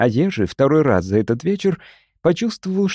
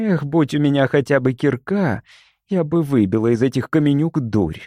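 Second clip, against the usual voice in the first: ordinary delivery, nothing marked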